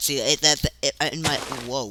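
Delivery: stumbling over words. Someone explaining a block-building tip, stuttering. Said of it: "sorry, stutter, stutter city right there".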